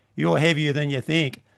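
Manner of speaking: very deadpan, dry, flat, expressionless delivery. Speaker recounts what his companion said once they were in the air, retelling a deadpan line. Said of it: "in a very deadpan voice".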